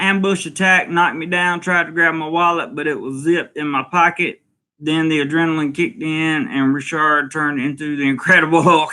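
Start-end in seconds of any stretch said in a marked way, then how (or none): none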